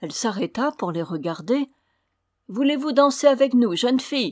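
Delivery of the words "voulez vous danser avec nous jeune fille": loud, high calling out. Narrator reads the dwarfs inviting a young girl to dance; called out. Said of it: "lui crièrent-ils".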